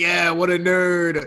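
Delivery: slow, jeering, mocking tone, laughing. Pointing at clothes another character holds up: mocking, laughing at. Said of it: "I'm gonna point and laugh at".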